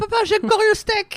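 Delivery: put-on excited, very high child voice squeal.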